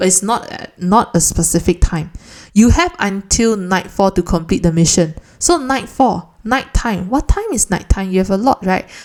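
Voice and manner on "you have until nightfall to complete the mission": usual speaking voice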